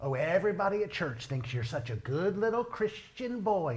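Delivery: mock scornful, taunting, mocking tone. Retelling what their mom said when they got in trouble, imitating mom's mocking tone. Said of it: "in that mocking tone of hers".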